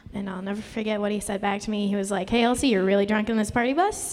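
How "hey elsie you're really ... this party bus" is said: usual speaking voice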